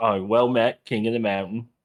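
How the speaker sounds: put-on sarcastic delivery. Describing a plan to look at someone and comment, acting out a sarcastic remark.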